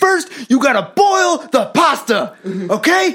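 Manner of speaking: aggressive, high, loud, pushy shouted hype voice.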